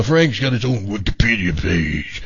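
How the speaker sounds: dropped-down voice.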